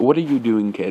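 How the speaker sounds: put-on curious, not scary voice. Retelling an old man asking a boy what he's doing: imitating a curious, not scary voice. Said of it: "in a curious and not scareful voice".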